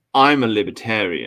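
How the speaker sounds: proud, self-important, declaring tone. Retelling what a guy kept saying, imitating the guy's way of saying it. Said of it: "like this".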